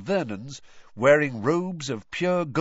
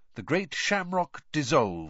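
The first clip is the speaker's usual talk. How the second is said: plain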